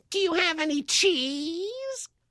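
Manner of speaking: very high, slow voice, "cheese" drawn out. Acting out Steve Urkel showing up on tour: Steve Urkel voice. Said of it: "Steve Urkel shows up? It'd probably be a little something like this".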